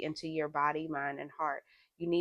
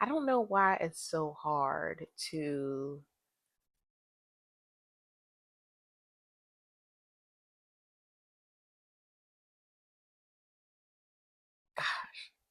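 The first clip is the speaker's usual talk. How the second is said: slow voice, fighting to keep emotion down. Reflecting aloud about a sudden headache, trying not to get emotional. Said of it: "I'm trying not to get emotional".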